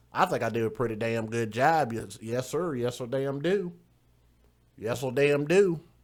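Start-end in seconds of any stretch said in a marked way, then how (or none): 1.9-5.7 put-on country accent, higher, slower. Showing off a country voice after asking whether it was good. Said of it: "Now tell me I didn't do a good country voice".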